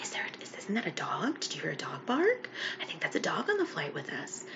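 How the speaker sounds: hushed, whispered chatter. Retelling what passengers on a plane said about a barking dog: imitating people whispering.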